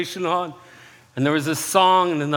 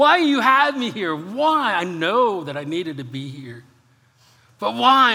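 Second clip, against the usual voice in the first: exasperated, frustrated tone; 3 semitones higher than usual. Retelling a bad day alone in a shut office: reenacted frustrated screaming. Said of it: "I was just screaming at God".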